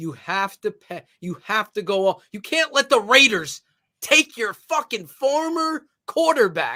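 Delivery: fired-up, riled-up, all-in ranting delivery. A host rants to the network's fans, fired up. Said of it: "I'm I'm I'm fired up".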